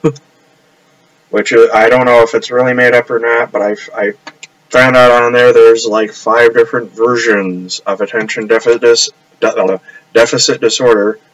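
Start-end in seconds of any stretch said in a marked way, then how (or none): 5.8-11.1 stumbling, tongue-tied, with restarts. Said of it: "I'm getting tongue-tied".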